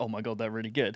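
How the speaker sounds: put-on muttering under the breath. Retelling what others muttered within his hearing, retelling a mutter under breath. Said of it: "mutter under their breath".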